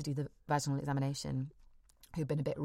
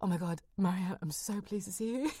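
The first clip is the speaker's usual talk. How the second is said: put-on crying, much higher; 4 semitones higher than usual. Speaker recounting Marianne walking in, imitating herself crying. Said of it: "I burst into tears".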